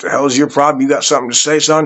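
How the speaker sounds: confrontational high-pitched scream. Retelling confronting a man with a knife: imitating someone screaming. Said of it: "I started screaming at him".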